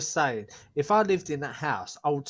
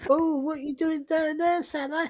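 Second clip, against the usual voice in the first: squeaky put-on character voice, pitched way up; 13 semitones higher than usual. Doing an impression of a ghost-show clip on request: Frank Spencer voice. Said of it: "Sounds like fucking Frank Spencer".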